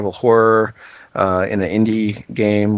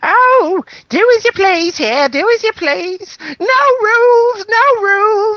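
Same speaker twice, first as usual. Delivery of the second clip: put-on very high, very drawn-out elderly British woman voice; 5 dB louder than usual. Quoting an aunt during a visit, old British woman voice. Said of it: "like an old British woman".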